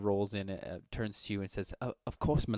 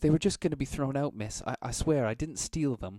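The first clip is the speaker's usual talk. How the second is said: put-on high, loud, frightened, pleading girl's voice; 5 semitones higher, 5 dB louder than usual. Voicing a girl offering oysters with a "don't hit me" look: fearful pleading girl. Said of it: ""Don't hit me" kind of expression on her face".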